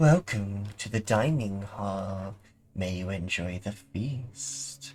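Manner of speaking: soft, ghostly, otherworldly, disembodied ethereal voice. Game master voices what the players hear after unlocking the door, spectral and ethereal. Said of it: "sort of spectrally and ethereal".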